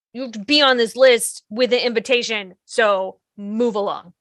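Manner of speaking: ordinary delivery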